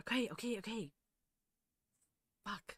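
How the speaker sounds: anxious, nervous, caving character voice. Voicing a nervous character who raises his hands: nervous character voice. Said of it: "He's nervous".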